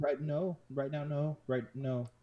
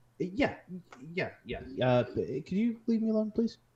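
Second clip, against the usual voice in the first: nervous, flustered stammer, high and raised; 8 semitones higher, 5 dB louder than usual. Voicing a sweating girl at blackjack asked if she's okay: nervous stammering girl. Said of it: "She is just sweating nervously".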